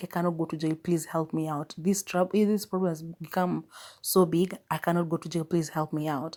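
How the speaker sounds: imitated tearful, crying voice. Retelling a film scene where a character begs not to go to jail: imitating a crying plea. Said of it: "He even starts crying and begs him and begs him".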